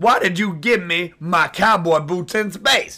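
growing angry. In a scene, confronting the other speaker, getting mad. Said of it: "and I am getting mad".

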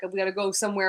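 plain

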